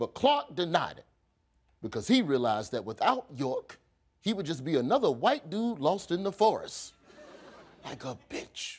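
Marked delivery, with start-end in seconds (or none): 7.8-8.8 very hushed, under-the-breath whisper. Narrating a history of an expedition, adding a quick aside, whispered.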